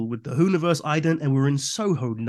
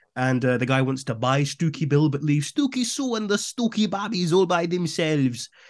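put-on, attempted German accent. Telling the story of Stooky Bill and the buyer, in an attempted German accent. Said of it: "is that you trying to do a German accent?".

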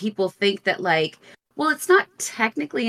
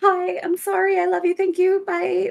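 very high, panicked, terrified squeak; 10 semitones higher than usual. Recalling a man pointing and freaking out, retelling own terrified reply. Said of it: "Like I was terrified".

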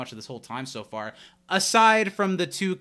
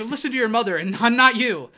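play-acted abrupt, sharp, raised snap, pitched up; 9 semitones higher, 5 dB louder than usual. Retelling a sitcom scene, quoting the character Abed: imitating Abed snapping. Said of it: "the way that he snaps".

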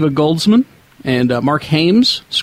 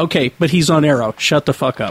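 ordinary delivery

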